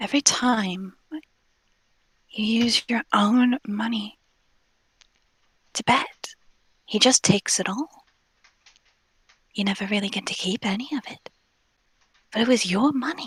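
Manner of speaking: hushed whisper, very quiet, just loud enough. An invisible character sneaks behind one of them, whispering in his ear. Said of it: "very quietly whisper in his ear".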